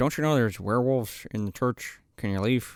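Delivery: weak, flat line reading. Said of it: "delivery that Tom Everett Scott is giving in this scene is so piss poor".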